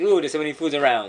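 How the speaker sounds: ordinary talk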